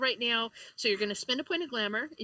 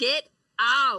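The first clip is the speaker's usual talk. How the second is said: very loud, human-like cawing crow voice; 10 dB louder than usual. Voicing a crow that speaks to the players: human-like cawing crow voice. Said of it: "a human equivalent of cawing comes from the".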